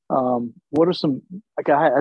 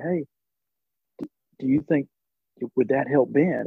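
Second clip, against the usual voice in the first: put-on whisper. Retelling a question asked in a parking lot: imitating own whisper. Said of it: "I remember whispering where I was standing".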